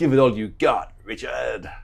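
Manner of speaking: loud, best-attempt put-on American accent. Repeating someone's message to Richard, in his best American accent. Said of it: "That was my best American accent".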